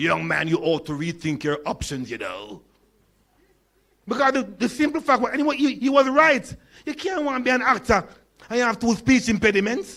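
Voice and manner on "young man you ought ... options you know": deep, resonant, authoritative pronouncement. Recalling an expert telling the young speaker he cannot be an actor: imitating Trevor Rowan's resonant voice. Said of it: "the resonant voice of the great Trevor Rowan".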